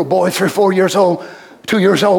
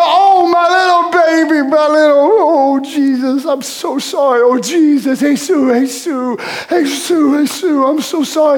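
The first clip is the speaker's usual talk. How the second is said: put-on soothing motherly voice, higher; 8 semitones higher than usual. Imagining a mother comforting a toddler who hurt his nose: as Mary soothing a crying baby. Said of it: "And Mary remember".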